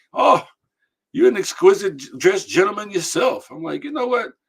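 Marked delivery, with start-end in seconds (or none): 0.1-3.4 friendly put-on Irish accent, raised pitch. Retelling what a man from ireland said to him, in a put-on irish accent. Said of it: "He had a you know the Irish accent".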